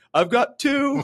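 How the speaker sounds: shrill, very high, loud voice. Retelling a scene from Talladega Nights: imitating Ricky Bobby's dad. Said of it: "Ricky Bobby's dad finally goes and he's like".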